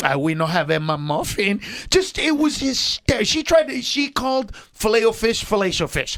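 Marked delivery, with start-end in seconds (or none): 0.1-1.6 lower-pitched put-on Puerto Rican accent. Retelling the worker's answer about the menu: imitating thick Puerto Rican accent. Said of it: "I just wanna hear her accent".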